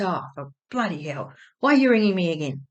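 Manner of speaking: put-on cranky voice, grumpy, irritated and fed up. Retelling a phone call, imitating Dad getting grumpy. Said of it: "he got grumpy again".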